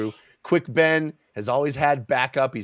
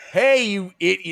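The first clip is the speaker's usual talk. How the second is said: put-on yell, higher and louder; 8 semitones higher, 4 dB louder than usual. Retelling a book scene where a character yells at attackers: imitating Quick Ben yelling. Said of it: "yelling at the, the Naruk".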